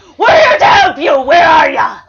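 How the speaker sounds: yelling out. Calling out in character to a scared woman nearby: yelling out. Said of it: "I yell that out".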